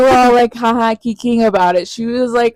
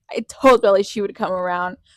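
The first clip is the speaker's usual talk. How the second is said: plain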